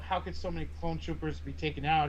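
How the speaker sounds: ordinary talk, nothing marked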